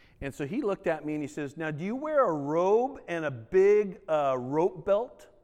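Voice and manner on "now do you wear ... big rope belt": very slow, drawn-out sarcastic tone. Retelling what someone said on leaving the police academy: imitating a sarcastic question. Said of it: "He was being sarcastic".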